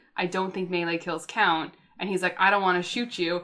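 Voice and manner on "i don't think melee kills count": very quiet, hushed, low-key voice. Recounting a game, repeating what you told the player who melee-killed you, retelling a quiet remark. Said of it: "I said to him quietly".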